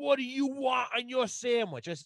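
high-pitched, loud yelling. Speaker retells a woman yelling a question at an old man with hearing aids, imitating someone yelling. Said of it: "now she's fucking yelling at him".

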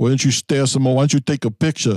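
put-on needling Bensonhurst accent. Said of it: "you sound like you're from Bensonhurst".

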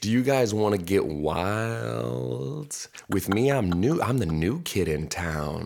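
slow, wildly drawn-out delivery. Retelling a TV scene, imitating Slater like an undercover cop. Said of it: "I can just picture him doing that".

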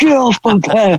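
put-on snapped yell. A parent describes their son snapping at a dinner question, imitating his yell. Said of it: "He snaps and yells".

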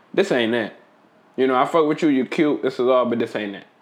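plain

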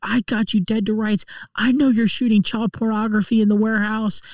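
angry, accusing tone full of righteous anger. Retelling a book scene where Stitcher yells at Toby Terrell, mock-angry. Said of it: "blue in the face, yelling at Toby Terrell".

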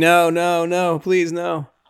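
put-on screaming. Retelling a movie scene where a masked killer closes in, imitating Jamie screaming. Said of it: "Jamie's just screaming".

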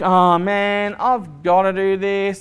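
mock grudging, slow reluctant grumble with a sigh. Acting out a giver who doesn't want to give: mock reluctant grumble. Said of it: "I don't want you to give reluctantly".

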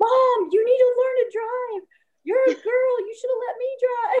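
mock frantic, high, panicked, freaked-out rant. Retelling the fourteen-year-old son's reaction after crashing into snow: imitating son freaking out. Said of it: "my fourteen-year-old son was freaking out".

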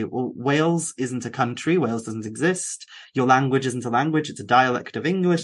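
usual speaking voice

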